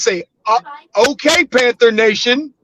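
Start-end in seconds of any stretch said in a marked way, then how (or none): none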